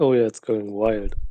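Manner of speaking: flat, dry, deadpan delivery. Answering about the wild Discord server: deadpan. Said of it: "The deadpan".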